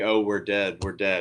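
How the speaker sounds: ordinary talk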